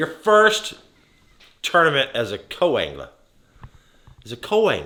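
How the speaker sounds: proud, high, loud announcer-style buildup.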